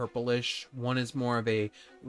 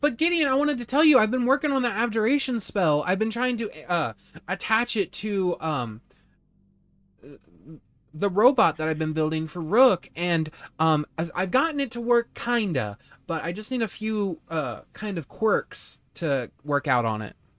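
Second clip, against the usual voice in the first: high, loud, swooping squeaky voice, bouncing all over; 7 semitones higher, 6 dB louder than usual. Voicing a little mouse man who runs up to Gideon in a bar: voicing Skiver, a little mouse man. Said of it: "a little mouse man named Skiver".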